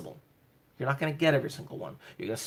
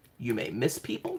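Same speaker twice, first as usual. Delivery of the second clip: ordinary delivery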